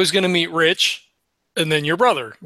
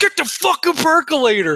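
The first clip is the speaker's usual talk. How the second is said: mock screaming, higher pitch; 11 semitones higher than usual. Retelling a morning argument in the street: imitating someone screaming. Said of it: "he's screaming at your brother".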